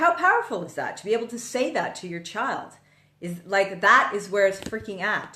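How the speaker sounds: worked-up, eager, fired-up, excited voice. Talking about saying to your child they'll never worry about money: fired up. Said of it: "I'm getting fired up now".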